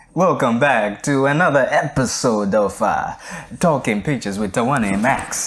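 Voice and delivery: terrible, fake, put-on Italian accent. A host opens this week's episode of the show, in a terrible fake italian accent. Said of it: "an Italian accent so terribly".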